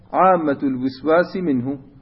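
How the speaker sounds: ordinary talk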